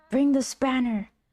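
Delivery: insistent, high, mild half-yelled, called out. Retelling how a locked-up Murdoch kept shouting at the speaker, imitating Murdoch yelling. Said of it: "he kept yelling at me".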